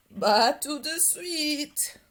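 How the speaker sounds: big, slow, grandfatherly grandpa voice. Narrator reading grandpa's answer to his granddaughter's question, in a big grandpa voice. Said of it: "La grosse voix de papy".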